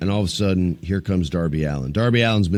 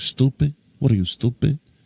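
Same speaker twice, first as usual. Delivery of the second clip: put-on New York accent, higher pitch; 5 semitones higher than usual. Imitating how a cousin would say it: new york accent. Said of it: "how my cousin would say it in New York".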